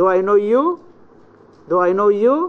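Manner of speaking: amazed, astonished tone, sharp high rise on you. Teaching intonation, demonstrating a question of astonishment with an astonished high rise. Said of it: "expressing astonishment or admiration, we use the high rise".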